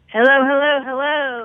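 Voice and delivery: booming, very loud voice, word repeated three times. Greeting the host as a joke: imitating Carol's greeting. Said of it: "Do I sound like Carol? That was Carol's move".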